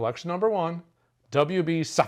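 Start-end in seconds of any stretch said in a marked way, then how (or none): 1.3-2.1 name hurried straight past, rushed and rattled off. Unsure how to pronounce a whiskey name, saying it really fast. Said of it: "I'm saying it really fast".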